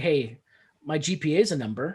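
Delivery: plain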